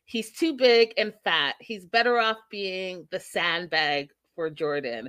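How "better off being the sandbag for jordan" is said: ordinary talk, nothing marked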